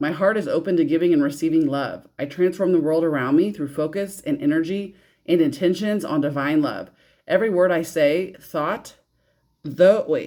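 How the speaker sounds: plain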